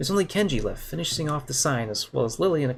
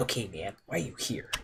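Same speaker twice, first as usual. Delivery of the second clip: secretive, hushed, conspiratorial half-whisper; 4 semitones lower, 7 dB quieter than usual. Reading a story aloud, a character leans in: conspiratorial half-whisper. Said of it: "lean towards me and whisper conspiratorially".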